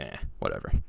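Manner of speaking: soft, whispered, dismissive shrug-off. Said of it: "and I'm like".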